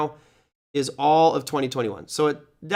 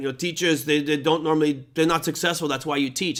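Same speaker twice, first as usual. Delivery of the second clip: put-on German-accented voice. Retelling what a student at a presentation said: german accent. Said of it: "I have to say with a German accent".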